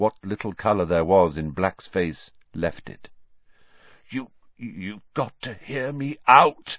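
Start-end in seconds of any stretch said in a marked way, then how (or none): 4.6-6.8 hoarse, rasping, croaky voice. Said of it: "he croaked".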